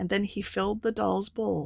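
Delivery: plain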